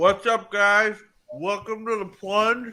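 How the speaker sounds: speaking through a mouthful. Host opening the show with a mouthful of chocolate, talking with mouth full. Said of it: "I got a mouthful of chocolate".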